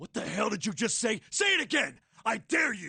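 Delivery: high-pitched, shouted, angry yell.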